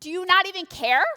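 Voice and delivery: put-on very loud, high, exasperated sarcastic shout. Acting out the disciples speaking to a sleeping Jesus: imitating sarcastic angry disciples. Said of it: "they're being sarcastic".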